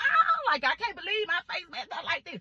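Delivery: put-on, half-hearted, mild, played-down scream. Retelling reacting to their sister's remark about their face, retelling a scream. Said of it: "I'm screaming".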